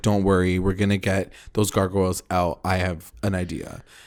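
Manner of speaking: normal talking voice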